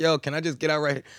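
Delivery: acted panicked voice. Retelling a wild taxi ride, the speaker acts out asking to get out, retelling a panicked request. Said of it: "I'm panicking".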